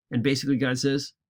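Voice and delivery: ordinary talk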